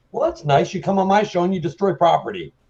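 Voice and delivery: put-on angry, annoyed, high-pitched, thick Canadian accent. Retelling a guest chainsawing his desk on the show: Tom Green angry, thicker Canadian accent. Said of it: "a thicker Canadian accent".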